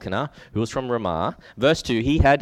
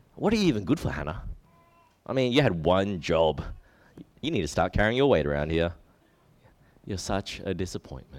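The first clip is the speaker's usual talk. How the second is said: low, cruel, mocking, sarcastic tone; 6 semitones lower, 4 dB quieter than usual. Retelling verse 6, the speaker imagines the rival provoking Hannah, imitating Peninnah mocking. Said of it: "She's probably using a mocking tone, sarcastic".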